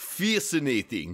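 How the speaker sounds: put-on Russian accent. Joking about Vulcans speaking with a Russian accent: Vulcan with Chekhov Russian accent. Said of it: "they would all sound like Chekhov".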